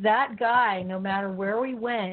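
ordinary talk, nothing marked

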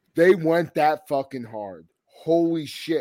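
usual speaking voice

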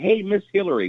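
put-on sweet, sugary voice. Retelling how he greeted a woman he confronted, putting on a nice voice. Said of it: "with a nice voice".

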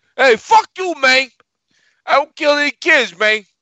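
put-on Cuban gangster accent. Mocking Batista's promo impersonation: Tony Montana accent. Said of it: "Batista doing his best Tony Montana impersonation".

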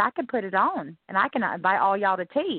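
put-on Southern Mississippi accent. Showing the accent from an early childhood in Mississippi: Southern accent. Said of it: "I can talk like this".

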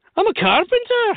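stunned-sounding, shocked Irish accent, pitched very high. Acting out a greeting exchange with an Irish person: shocked-sounding Irish accent. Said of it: "It's a complete shock".

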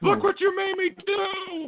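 mock very high, drawn-out, angry yelling. Speaker retells the woman who rear-ended a guy, retelling her yelling. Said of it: "she's still yelling at me".

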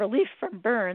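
ordinary talk

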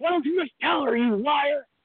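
high-pitched yelling. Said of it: "So I was yelling at her".

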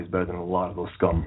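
usual speaking voice

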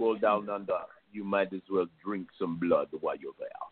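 vampire voice with mixed Jamaican and Australian accent. Answering a co-host's question about the accent; jamaican australian vampire accent. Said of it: "Now you sound like a Jamaican Australian vampire".

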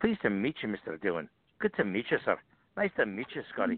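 sing-song delivery with swooping pitch. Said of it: "practicing doing his voice".

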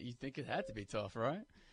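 sarcastic tone, meaning the opposite. Commenting on how hard a pitch-counting job is: sarcastic. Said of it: "I'm being sarcastic when I say".

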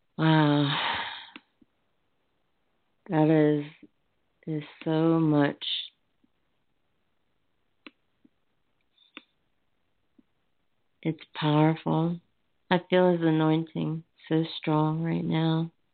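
near tears, fighting back crying. Speaking to listeners about his anointing and scripture, holding back tears. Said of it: "That's all I can do to stop from crying here".

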